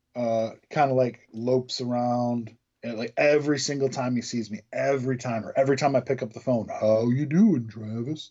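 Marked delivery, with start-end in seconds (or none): 6.7-8.3 put-on glum, unexcited voice. Imitating an older man who greets him on the phone, Eeyore voice. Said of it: "Got this like Eeyore voice".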